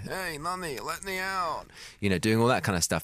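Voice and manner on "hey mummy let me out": very high, very slow, soft thrown ventriloquist voice. Stand-up describing throwing his voice as a pregnant woman walks past: thrown ventriloquist voice. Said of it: "throw my voice and do".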